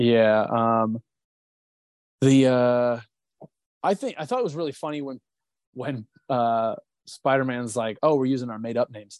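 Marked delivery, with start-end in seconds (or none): 8.0-9.2 dead serious, matter-of-fact delivery. Retelling a funny Spider-Man line: imitating Spider-Man super serious. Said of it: "super serious about it".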